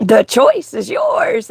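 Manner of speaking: voice cracking and breaking on the words. Speaking about mental health and personal choice, voice cracking. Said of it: "as my voice is cracking".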